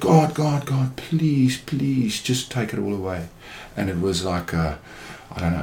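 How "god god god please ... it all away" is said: tearful, crying, pleading voice, quieter. Recalling praying with pressure on the head, retelling a tearful plea. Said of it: "you're crying so much".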